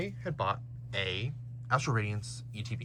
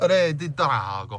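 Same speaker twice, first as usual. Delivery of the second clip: Italian-style accent; 4 semitones higher, 10 dB louder than usual. Saying the name Regidrago the way they always do, Italian-type accent. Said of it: "I have to say it in that like accent. It's like Italian type accent".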